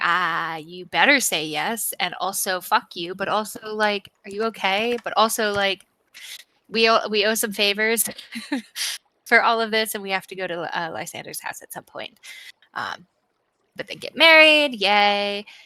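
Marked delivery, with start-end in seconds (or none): none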